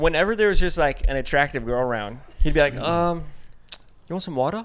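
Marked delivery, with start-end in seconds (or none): 2.8-4.6 put-on Aussie accent slipping out. Retelling how a friend spoke to an attractive girl: imitating Corey's Australian accent. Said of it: "his accent would come out".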